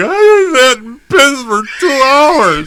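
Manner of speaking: very high, slow, drawn-out sobbing wail. Retelling scrubbing a leg in the shower: imitating own crying.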